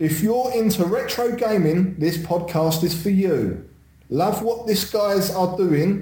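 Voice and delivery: put-on London Cockney accent. The speaker reads out a received message in a cockney accent. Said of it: "I'll read this in my normal Cockney accent".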